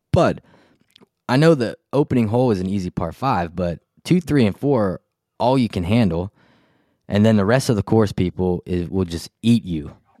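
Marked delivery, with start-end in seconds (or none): none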